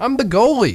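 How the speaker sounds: put-on exasperation. Telling a joke, voicing a little girl's answer to Kathy, mock-exasperated. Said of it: "the little girl said with exasperation".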